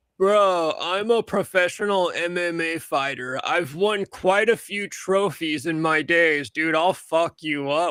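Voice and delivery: mock, slow, sluggish, drugged-out drawl. Retelling what a guy said over the phone; imitating Patrick's slow drugged voice. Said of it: "in his slow ass Xanaxed out voice".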